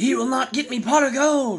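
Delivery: cackling, shrill, twisted little gnome voice, pitched way up. Narrating a scene, voice the friend-turned-gnome's line as a cackling gnome voice. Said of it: "the creature cackles".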